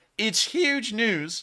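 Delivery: high, slow voice cracking with excitement. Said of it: "Sorry for the voice crack there".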